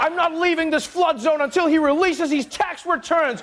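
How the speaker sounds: high, defiant tone.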